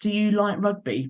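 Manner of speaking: mock, very patronising, condescending talking-down tone. Retelling asking her about rugby, in a mock patronising voice. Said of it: "in a very patronising voice".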